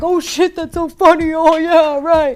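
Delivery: mumbling chorus of agreeing voices. Retelling how his friends reacted around him, imitating friends mumbling. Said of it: "mumbling around him like".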